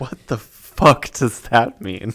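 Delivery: put-on panicked voice. Retelling his reaction to another player's instructions at game start, retelling own panic. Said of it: "I'm panicking".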